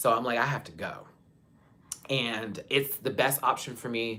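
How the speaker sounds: emotional voice, choking up with welling feeling. Telling viewers why leaving is the best option, getting emotional. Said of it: "I'm getting emotional".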